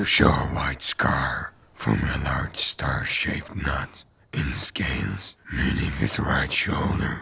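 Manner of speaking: ordinary delivery, nothing marked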